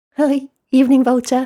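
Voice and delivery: high casual nonchalant voice. Bat greets Vulture, who guards the entrance, while hurrying inside, nonchalant. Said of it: "Bat said nonchalantly".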